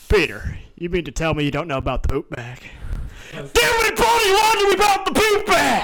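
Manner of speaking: very high, slow, swooping cartoon voice. Doing an impression after being asked for Joe from Family Guy: Joe from Family Guy voice. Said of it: "do, uh, Joe from Family Guy".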